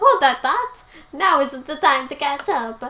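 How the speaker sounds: put-on fast, loud Italian accent. Voicing the character EGAD, in EGAD's Italian accent. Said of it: "Why did I give EGAD an Italian voice?".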